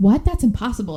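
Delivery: normal talking voice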